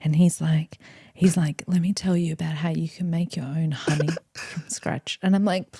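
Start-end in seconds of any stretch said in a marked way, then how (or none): 1.7-5.2 put-on soft, calm British accent, eased into gently. Describing Bob, who has millions of followers, in Bob's calm British accent. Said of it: "the most calming British accent voice you've ever heard".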